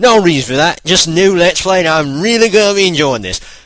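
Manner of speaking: put-on Australian accent. Opening a new Let's Play video for viewers: Australian accent. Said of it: "I'm in an Australian accent".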